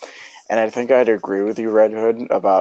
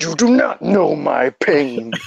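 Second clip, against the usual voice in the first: slow, drawn-out delivery, calm yet angry; 6 semitones higher than usual. Joining talk about Kratos's voices in God of War: Kratos voice. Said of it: "Don't turn into Kratos".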